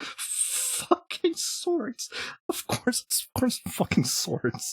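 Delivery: breathy half-whisper, talking through laughter. Card player reacting to a pack that pops swords, laughing while talking. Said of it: "I'm sorry for laughing".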